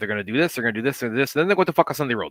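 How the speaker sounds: put-on heavy Puerto Rican accent. Retelling a drill briefing by a man from Puerto Rico: imitating a heavy Puerto Rican accent. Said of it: "he has a heavy accent".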